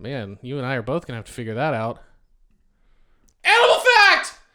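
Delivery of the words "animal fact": full-on shrill, very high-pitched scream. On a show, announcing a recurring segment by its name: screaming. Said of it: "that's what it means when I scream that".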